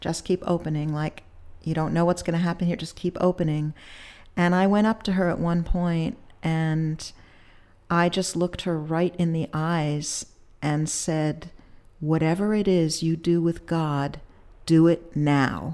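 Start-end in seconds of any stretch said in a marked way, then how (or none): 12.0-15.7 commanding, deliberate, slow and very authoritative tone. Recounting looking a woman in the eyes and telling her, in a very authoritative tone. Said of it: "in like a very authoritative tone".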